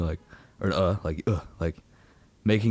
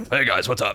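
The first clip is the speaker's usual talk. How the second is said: guarded, defensive put-on sitcom-style cartoon voice. Retelling how their own stage greeting sounds: Joe from Family Guy voice. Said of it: "I sound like Joe s-, from Family Guy".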